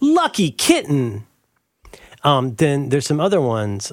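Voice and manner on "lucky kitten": phrase called out, lightly. Yelling out remembered phrases from children's books: yelling out a phrase. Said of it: "I'm just gonna yell out some phrases".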